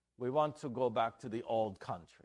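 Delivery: bad, fake, put-on Dutch accent. Storyteller voicing a father going back to find his son a wife, bad Dutch accent. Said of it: "That's my Dutch accent".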